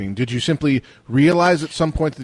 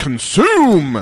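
loud put-on shout of one word; 4 semitones higher, 5 dB louder than usual. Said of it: "Sorry, just, just voicing".

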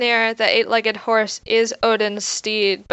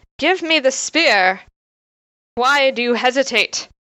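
mock pushy, demanding, insistent, pressing tone; 3 semitones higher than usual. Voicing a character described as pretty insistent, with an insistent demand. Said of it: "he's pretty insistent".

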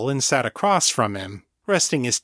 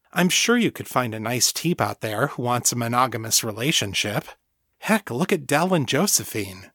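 plain reading voice

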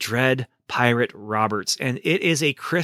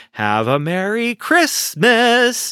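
mocking, sarcastic, high-pitched sing-song delivery; 9 semitones higher, 6 dB louder than usual. Quoting a woman's message from the movie 12 Monkeys, mock-sarcastic quote. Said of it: "she gives this sarcastic at the end of the message".

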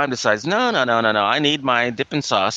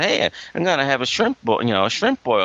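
ordinary talk, nothing marked

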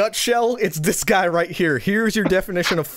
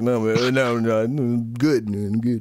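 put-on drunken man's slur, lower-pitched; 8 semitones lower than usual. Retelling a drunk man's reply to him, imitating Brandon's drunk slurring. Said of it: "because Brandon was drunk".

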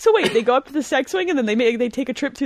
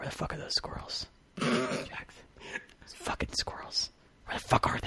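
hushed, barely voiced, very quiet whisper; 9 semitones lower, 15 dB quieter than usual. Speaker retells sitting beside jax at the window, whispering in his ear. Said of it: "I just whisper in his ear".

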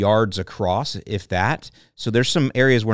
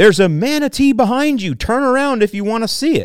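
acted, very high, loud hollering call-out; 12 semitones higher, 5 dB louder than usual. Speaker recounts a man at the front of a boat calling out, retelling a yell. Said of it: "he's yelling out".

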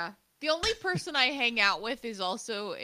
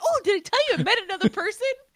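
mock-excited, put-on adorable voice, higher and louder; 12 semitones higher, 6 dB louder than usual. Teasing the other speaker by imitating him: imitating Steven, adorable and excited. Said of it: "just be Steven and adorable and excited".

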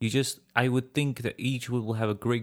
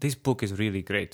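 English spoken with a Serbian accent; 3 semitones lower than usual. Showing how the line sounds in a Serbian accent: Serbian accent. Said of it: "do your Serbian".

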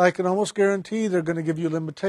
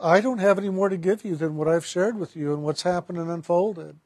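normal talking voice

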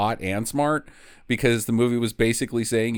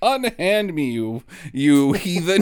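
put-on old-fashioned indignant lady voice, higher pitch; 6 semitones higher, 3 dB louder than usual. Acting out a character hurling old-timey insults: mock old-timey affronted lady. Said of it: "she just uses a bunch of old-timey slang insults".

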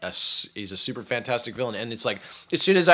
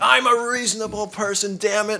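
mock, very high, panicked, indignant screaming; 10 semitones higher, 3 dB louder than usual. Describing a comic-book character who reacts to everything: imitating Negan screaming. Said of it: "he's just screaming".

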